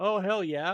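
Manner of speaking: mock-triumphant, smug, gloating little cheer. Recalling watching Canadians after beating them at hockey, retelling a smirking cheer. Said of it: "with the smirk on my face".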